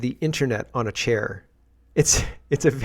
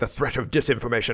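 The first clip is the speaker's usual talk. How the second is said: commanding, authoritative, strong official announcement voice; 2 semitones lower, 3 dB quieter than usual. Repeating a line from a played video: imitating a very authoritative voice. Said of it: "very, very strong voice".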